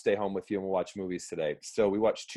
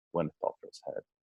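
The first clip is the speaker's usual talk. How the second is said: mock mutter, lower, quieter and faster; 5 semitones lower, 6 dB quieter than usual. Telling a story, speaker imitates their dad answering while muttering under his breath. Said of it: "like under his breath".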